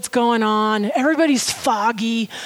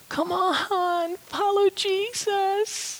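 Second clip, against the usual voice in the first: soft, high, pleading, coaxing voice; 8 semitones higher, 7 dB quieter than usual. Describing a voice you might hear, mimicking a begging voice. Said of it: "a voice begging you".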